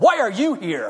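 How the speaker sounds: brash, loud, obnoxious, in-your-face delivery. Retelling what a woman said to a man at the door, mock-loud and obnoxious. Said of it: "as loud and as obnoxious as she could".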